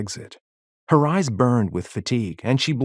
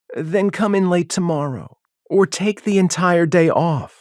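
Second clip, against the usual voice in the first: patronizing, condescending tone, pitched up; 7 semitones higher, 3 dB louder than usual. Reading a story, the councilwoman brushing off the clerk: condescending. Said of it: "Her words dripped with condescension".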